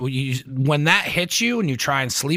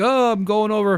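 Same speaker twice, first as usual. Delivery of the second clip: horrible fake Sicilian accent, pitched up; 7 semitones higher than usual. Imitating a friend who offers to go out: imitating a Sicilian accent. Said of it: "That's my, uh, Sicilian accent".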